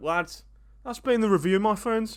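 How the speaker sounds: put-on Birmingham accent. Wrapping up the review for viewers: put-on Birmingham accent. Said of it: "Do you like that Birmingham accent".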